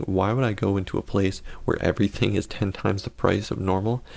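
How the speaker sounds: ordinary delivery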